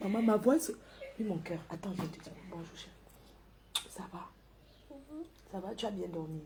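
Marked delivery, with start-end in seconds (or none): 1.2-6.4 very soft, low-pitched talk. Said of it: "je parle doucement".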